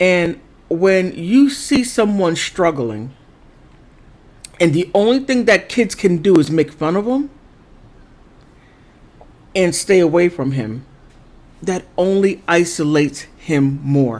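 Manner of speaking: voice strained, struggling to hold back emotion. Speaker on a painful subject, struggling not to get emotional. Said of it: "I'm sorry, I'm failing at this".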